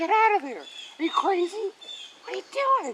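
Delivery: mock very high, loud, swooping yell. Retelling how someone yelled at the speaker in the water, retelling a yell. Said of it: "Wizzy was yelling at me like".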